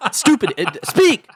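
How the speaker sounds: put-on high, loud, scolding yell. Retelling a failed recording take, imitating his own yell. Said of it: "And I just yell at myself".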